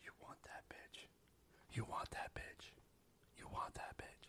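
very quiet, hushed, breathy whisper. Recapping a show scene where Mills speaks to Ezra, Mills whispering. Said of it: "whispering to Ezra".

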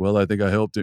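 put-on deadpan delivery. Retelling a remark about having helped Cal, in a deadpan Nate Oates impression. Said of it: "he did it in his Nate Oates deadpan way".

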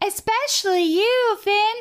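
very high, prim cartoon princess character voice. Asked to do a character from the episode, speaker does Hot Dog Princess voice. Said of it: "I'm gonna do Hot Dog Princess".

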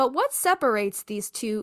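strong stress on what, punched at the start.

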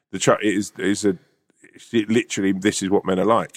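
normal talking voice

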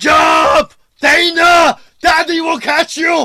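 very high, booming, slow delivery with stretched words. Quoting the one line from an Arnold movie scene, in an Arnold impression. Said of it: "Read me something in the Arnold voice".

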